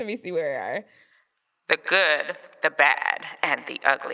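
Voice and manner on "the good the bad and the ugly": loud announcer voice, as if calling through a megaphone. A host welcomes everyone to another episode, megaphone voice. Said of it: "That's my megaphone voice".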